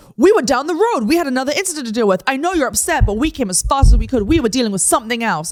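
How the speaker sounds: high, loud and hard-pushing defensive tone.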